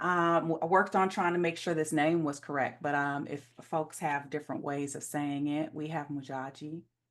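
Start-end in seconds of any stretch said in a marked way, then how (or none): 5.7-6.8 sensual sultry voice, much quieter. Host introducing the next conjurer by name, sensual. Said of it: "said it with a little extra sensuality".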